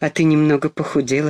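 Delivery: plain reading voice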